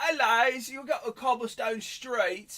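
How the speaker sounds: high, very broad put-on Cockney accent, laid on thick. Showing the accent being talked about: Cockney accent. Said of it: "it's very Cockney, and it's like".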